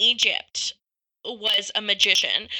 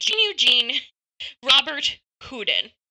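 clumsy, terrible Americanized English pronunciation; 3 semitones higher than usual. Saying a french magician's name as a terrible american english accent would. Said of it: "with terrible English American accent".

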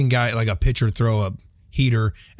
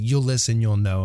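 ordinary talk

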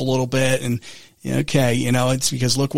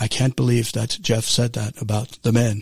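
public radio host voice, on-air broadcaster delivery; 2 semitones lower than usual. Host imagines listeners objecting to his remark: NPR voice impression. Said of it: "The NPR voice".

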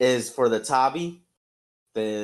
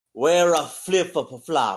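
put-on Japanese accent. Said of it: "explain to him Okinawan in the accent you just did".

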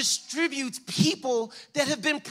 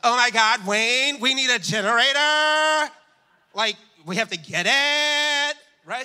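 put-on upset valley girl voice with stretched words; 3 semitones lower, 3 dB louder than usual.

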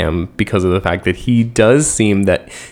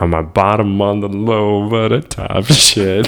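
cool, calm, low, slow drawl. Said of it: "cool, calm, collected, low, little [name] voice".

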